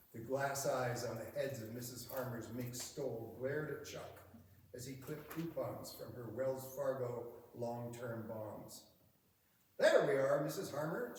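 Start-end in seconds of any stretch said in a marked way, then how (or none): 9.7-11.1 chipper, cheery, raised customer-service voice. A bank employee tells a customer her coupons are ready, in a cheery bank voice. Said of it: "using his cheery bank voice".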